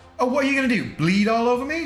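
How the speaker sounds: bad put-on British accent. Quoting Monty Python and the Holy Grail, in a bad British accent. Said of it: "Told you it was bad accent".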